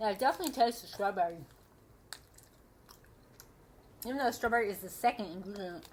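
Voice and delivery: speaking through chewing, mouth full of food. Tasting the strawberry gummies and describing them, talking while chewing. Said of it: "Excuse me, I'm chewing".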